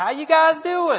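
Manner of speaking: put-on very loud, very high, convincing Tennessee accent. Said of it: "With a good Tennessee accent".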